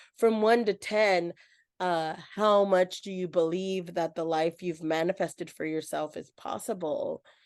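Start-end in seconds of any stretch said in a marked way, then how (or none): none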